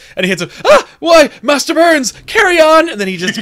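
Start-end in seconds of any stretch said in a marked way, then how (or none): 0.7-2.9 Irish man character voice, higher and louder. Retelling a cartoon scene, voicing an Irishman hit by bumper cars: Irish man character voice. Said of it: "clearly an Irish descendant of Homer Simpson".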